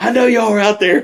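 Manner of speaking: put-on angry high yell. Retelling a prank night, imitating Sean cussing angrily from the porch. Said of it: "just cussing at us".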